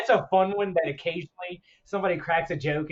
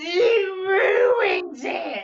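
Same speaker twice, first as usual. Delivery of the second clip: put-on upset creature voice, much higher, slower; 13 semitones higher, 4 dB louder than usual. Retelling a scene about stew, answer as Gollum: Gollum voice, mock-upset. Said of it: "he's just so upset".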